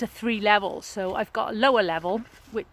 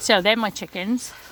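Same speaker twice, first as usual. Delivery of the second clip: plain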